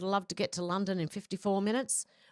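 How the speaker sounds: ordinary delivery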